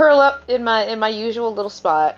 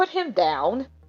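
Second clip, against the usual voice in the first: menacing, threatening, firm tone, no room to argue; 5 dB quieter than usual. Voicing a character who glares at a rough stranger: death-glare warning. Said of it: "give a death glare and be like".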